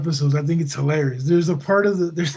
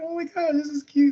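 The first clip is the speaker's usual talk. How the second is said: put-on talking through laughter, pitched way up; 10 semitones higher than usual. Retelling a show scene where Sam laughs: imitating Sam laughing while talking. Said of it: "Sam's all laughing".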